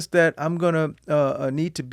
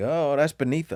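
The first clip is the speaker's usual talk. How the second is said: ordinary delivery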